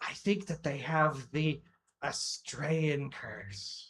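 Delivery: slow, loud, carrying stage whisper. Voicing Taste whispering aside to the orc, loud stage whisper. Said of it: "she kind of like loud whispers to the orc".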